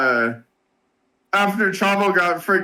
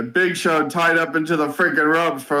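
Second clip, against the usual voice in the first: ordinary talk, nothing marked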